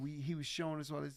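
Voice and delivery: ordinary delivery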